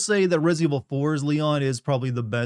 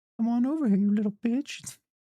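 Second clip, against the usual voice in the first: high-pitched voice whistling through the teeth; 9 semitones higher than usual. Speaker shows off a tooth whistle, then calls someone over: Herbert impression. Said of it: "I don't know how many of you can do teeth whistles".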